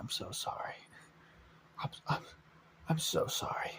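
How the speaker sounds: very quiet, barely audible whisper. Retelling what one character says to another character, whispering. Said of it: "like he whispers".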